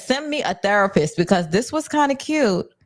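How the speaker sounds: ordinary delivery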